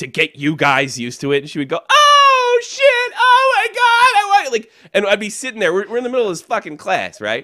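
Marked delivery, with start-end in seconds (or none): 1.9-4.5 mock over-the-top cries, very high, very slow, drawn-out. Imitating a Lamaze teacher acting out labor in class: imitating someone acting out labor pains. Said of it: "she would act like she was in labor".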